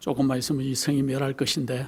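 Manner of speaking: very quiet, soft, gentle, without force. Imagining how Jonah told the market the city would fall: soft, gentle delivery. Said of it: "아마 이랬을 거예요. ... 살살 얘기했을 것 같아요".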